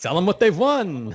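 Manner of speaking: put-on cheesy voice. Asked whether Sonar pays him for the spoofs, answering in a cheesy cheese-ball voice. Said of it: "I just love sounding like a cheese ball".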